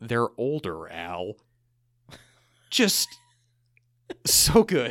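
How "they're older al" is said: very low, dry, deadpan delivery. Speaker quotes a favorite line, one man answering another's question, retelling a deadpan line. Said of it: "So deadpan".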